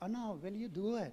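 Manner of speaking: very quiet, gentle, soft-spoken manner. Show how a very unique man talks when he asks Anna to do it, imitating a soft-spoken man. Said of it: "a soft spoken man, and um, he uh, talks like this".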